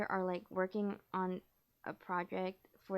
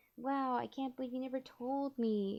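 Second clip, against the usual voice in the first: high, sweet, really cheerful and nice tone; 5 semitones higher than usual. Retelling how a woman talks to an old teammate, imitating a cheerful nice tone. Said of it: "really cheerful and nice".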